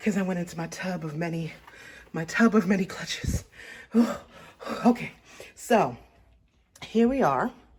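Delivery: breathless, out of breath. Styling a dress right after digging through a tub of clutches, out of breath. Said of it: "I'm out of breath".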